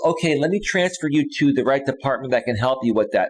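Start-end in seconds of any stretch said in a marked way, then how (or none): none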